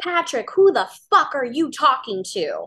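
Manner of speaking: screamed loudly, pitch swooping. Speaker retells a woman screaming at their dad during a phone call, retelling a scream. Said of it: "she screamed at him".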